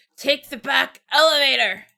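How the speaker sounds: slow, croaking, muffled voice. Retelling a game scene, quoting a hurt Louvet: croaky muttering as Louvet. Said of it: "little croak of, like, clearly still stuffing".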